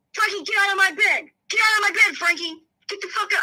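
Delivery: put-on yelling, high-pitched. Retelling how a brother in bed yelled from upstairs: imitating someone yelling. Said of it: "we're hearing Ronnie yelling".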